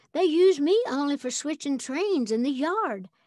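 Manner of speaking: ordinary delivery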